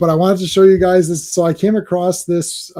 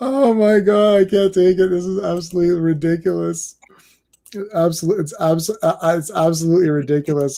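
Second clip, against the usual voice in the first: words broken up by laughter, laughing throughout. Reacting to a funny picture just put up: laughing while talking. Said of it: "I was just laughing".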